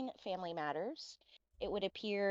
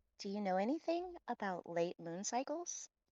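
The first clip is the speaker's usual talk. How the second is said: whispering very quietly, hushed; 2 semitones higher than usual. In a roleplay scene, a character whispers into another's ear: whispering very quietly. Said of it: "I whisper very quietly in your ear".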